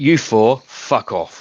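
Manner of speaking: distinctly English accent, put-on. A man confronted by people approaching his van answers in a distinctly English accent. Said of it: "a distinctly English accent".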